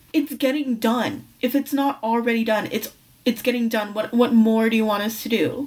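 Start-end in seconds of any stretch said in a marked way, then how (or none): none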